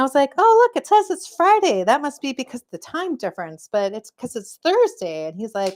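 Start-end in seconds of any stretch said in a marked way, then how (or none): 0.4-5.3 put-on, pitched-up, sing-song, fancy show-off voice. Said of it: "I was Miss Fancy Pants".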